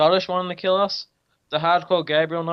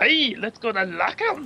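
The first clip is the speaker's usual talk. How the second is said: high, unconvincing put-on Scottish accent; 5 semitones higher than usual. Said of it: "That does not sound anything like Scottish".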